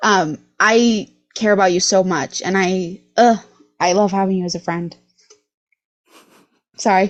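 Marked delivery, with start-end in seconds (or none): 0.6-5.0 voice on the verge of tears. Telling a friend what having them means, holding back tears. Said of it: "I'm trying so hard not to cry".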